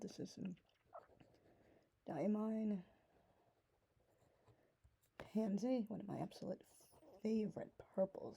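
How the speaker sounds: losing their voice. Presenting ink colours one by one while losing their voice. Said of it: "I'm losing my voice".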